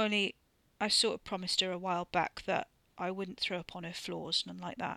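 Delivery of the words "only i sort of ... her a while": ordinary delivery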